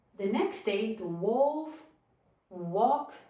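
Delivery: ordinary delivery, nothing marked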